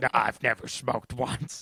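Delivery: wild, rough, raspy smoker's voice. Describing a man, the speaker quotes him in a crazy smoker's voice. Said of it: "with a crazy smoker's voice".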